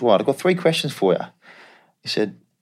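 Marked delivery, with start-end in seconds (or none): 0.0-1.2 put-on Australian accent, pitched up. Retelling a phone call from your agent, imitating Scott's Australian accent. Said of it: "he's Australian, it's quite funny".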